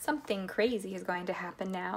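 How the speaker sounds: plain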